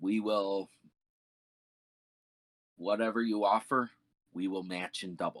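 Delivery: crackling, almost bestial creature voice. Narrating a hooded figure stepping forward to outbid an offer: crackly, almost bestial voice. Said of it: "in a crackly, almost bestial voice".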